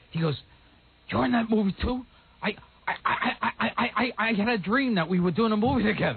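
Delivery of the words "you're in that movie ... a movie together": put-on stuttering voice. Retelling what Stuttering John said outside: Stuttering John impression.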